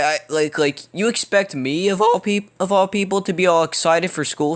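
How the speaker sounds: voice cracks up high in the middle of a phrase. Speaker telling listeners how things are going lately, voice cracking. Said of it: "Sorry for the voice crack".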